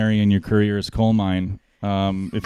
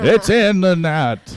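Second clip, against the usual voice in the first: put-on old hockey announcer voice, pitched higher; 9 semitones higher than usual. Imitating a hockey announcer who forgets names: Bob Cole impression. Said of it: "He just goes".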